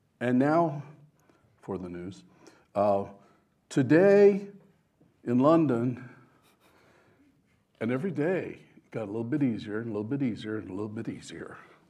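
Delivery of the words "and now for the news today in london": loud, slow radio announcer newsreader voice. Recalling reading the newspaper aloud for practice, a speaker uses a radio announcer voice. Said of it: "read it like I'm a radio guy".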